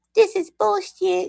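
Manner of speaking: put-on squeaky, rough, high little baby voice. Speaker tries the voice adults use on streams: cute little baby voice. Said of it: "I don't do that voice very good".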